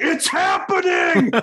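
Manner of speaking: mock excited shriek, very high. Retelling seeing a light beam above the car: retelling an excited scream. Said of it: "He's screaming".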